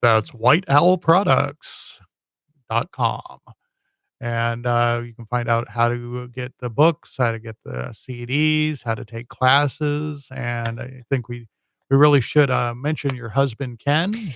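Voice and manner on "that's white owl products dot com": on-air radio announcer voice. A host repeats the guest's website address in a radio voice. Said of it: "use my radio voice".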